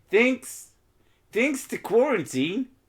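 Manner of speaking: terrible put-on Australian accent, very high. Joking about talk-to-text errors, the speaker tries a terrible Australian accent. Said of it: "that is a fucking terrible Australian accent".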